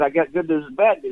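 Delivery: normal talking voice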